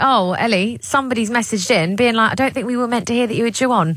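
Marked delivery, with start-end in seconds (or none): none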